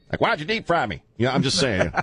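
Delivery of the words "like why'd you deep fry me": put-on Louisiana accent. Joking how fried catfish would talk: James Carville voice. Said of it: "it would sound like James Carville".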